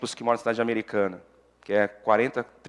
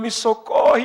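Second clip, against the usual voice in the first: shouting, pitched higher and louder; 12 semitones higher, 7 dB louder than usual. Retelling voices heard while praying at night: imitating couples shouting. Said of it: "casais gritando".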